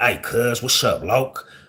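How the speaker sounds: talking like a street gangster. Speaker recalls how he used to greet people, talking like a gangster. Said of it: "I had to teach myself not to talk like a gangster".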